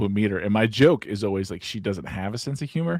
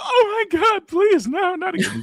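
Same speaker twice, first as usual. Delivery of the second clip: mock begging, very high, drawn-out pleading voice; 8 semitones higher, 6 dB louder than usual. Retelling a pretend game, quoting her playful reply with mock pleading. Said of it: "and she'd go".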